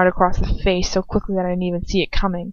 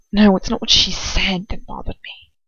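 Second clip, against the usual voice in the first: theatrical whisper. Reading a story aloud, voicing the man's reply in a whisper. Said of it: "He whispers".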